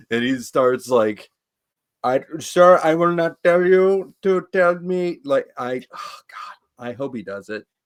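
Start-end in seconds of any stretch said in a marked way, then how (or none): 2.0-5.2 put-on Indian accent, loud and pitched up. Imagining a friend answering rednecks in the South: put-on Indian accent. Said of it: "an Indian accent".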